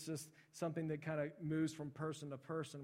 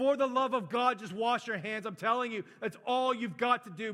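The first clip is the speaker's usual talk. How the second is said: very loud, raw, high-pitched pleading scream; 7 semitones higher, 11 dB louder than usual. Retelling a doctor at a conference screaming: imitating someone screaming. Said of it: "He walks up and he just screams".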